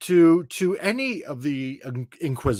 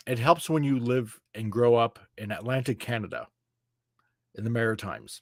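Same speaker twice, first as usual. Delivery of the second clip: ordinary delivery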